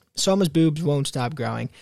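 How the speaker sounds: usual speaking voice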